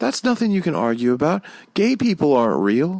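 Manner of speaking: mock sweet, kindly voice. Retelling what an old lady said, imitating a very nice voice. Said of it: "with a straight face and the nicest voice".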